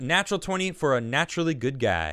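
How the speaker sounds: ordinary delivery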